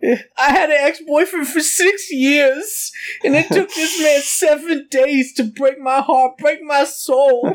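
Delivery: put-on very high, tipsy, weepy drunken blubbering. Speaker acts out a quote, imitating Maria Elena drunk crying. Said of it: "my drunken marty elena like crying voice".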